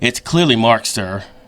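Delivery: low, patronizing, talking-down tone. Speaker retells a man's reply to his apology, mimicking a condescending tone. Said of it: "He then says in the most condescending tone ever".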